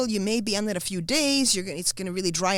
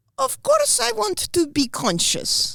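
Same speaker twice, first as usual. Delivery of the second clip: put-on heavy Russian accent, high and drawn out; 12 semitones higher, 4 dB louder than usual. Quoting mom's reply to the doctor and nurse in a big Russian accent. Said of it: "That was a big Russian accent".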